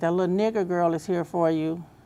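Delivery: ordinary talk, nothing marked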